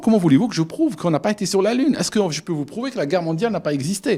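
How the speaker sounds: put-on German accent. Quote a man with a German accent answering a question, in a put-on thick German accent. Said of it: "avec son accent allemand".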